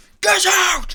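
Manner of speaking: raging, shrill, furious scream at full volume. Voicing a figure screaming at the party after being asked if he is cursed: screaming furiously. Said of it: "and he is furious".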